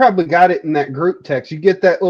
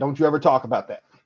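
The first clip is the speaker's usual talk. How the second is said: angry voice, lower and quieter; 4 semitones lower, 6 dB quieter than usual. Retelling how someone reacted to a joke on stream: imitating someone angry. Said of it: "he was getting so pissed".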